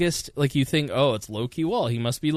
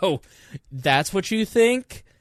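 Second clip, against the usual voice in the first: put-on jealous girlfriend tone, high, drawn out; 5 semitones higher, 3 dB louder than usual. Showing how they react to comments online: acting like a jealous girlfriend. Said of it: "I turn into, like, a jealous girlfriend".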